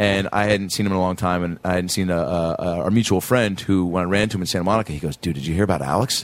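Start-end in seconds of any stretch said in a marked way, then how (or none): 5.2-6.2 mock grave, grim and ominous foreboding tone. Retelling a friend's question that sounded like bad news: imitating a grim "he's dead" tone. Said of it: "don't say it with the tone of he's dead".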